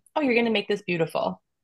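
cool, calm, collected, unruffled reassuring tone. Retelling an inner voice answering a scream: imitating a calm, collected voice. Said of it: "calm, cool, collected, the voice was like".

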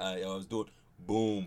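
very deep, very low, very slow, drawn-out delivery. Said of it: "Like when he do interviews, he be like".

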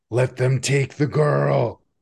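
very loud shouting. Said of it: "You're super loud".

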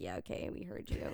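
put-on very low, weary, bored brush-off. Speaker quotes Max's engineer answering his complaints, imitating a bored, tired voice. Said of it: "he sounds so bored and so tired of hearing that".

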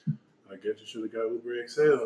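utterly calm deadpan, low and soft. Retelling a guy's reply to a joke about a skinny man in the car, mimicking the calmest voice. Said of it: "just said in the calmest voice".

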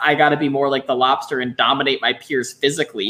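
ordinary talk

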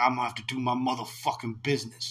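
put-on Chicago street-tough accent. Imitating an actor whose accent slides into a thug voice: imitating an actor's Chicago thug voice. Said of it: "devolves into, like, Chicago thug".

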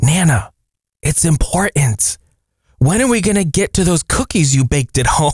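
put-on whisper in a child's voice. Reading a grandmother's note about her grandson in church: imitating a child whispering. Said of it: "And he whispers".

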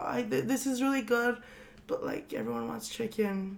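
soft, fast apologetic murmur. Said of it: "I was just like".

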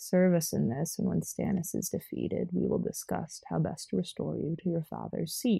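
hushed, soft, whispery, breathy sexy voice. Reading Roose's dialogue from the book aloud; sexy Roose voice. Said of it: "I'm gonna use the fucking sexy voice I used to read Roose's part".

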